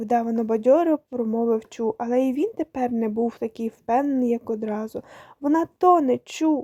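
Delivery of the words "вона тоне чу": desperate, despairing cry. A girl calls to her companion as another girl vanishes under the water, crying out in despair. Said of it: "у розпачі крикнула Соня".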